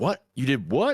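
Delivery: anger building to a rising, angry outburst. A man growing angrier and angrier hears what she did; getting angrier. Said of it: "starting to get angrier and angrier".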